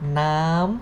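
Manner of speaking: nam said with a high pitch tone. Tone lesson, nam with the second tone mark: high tone on nam. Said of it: "the second tone mark that represent the high sound".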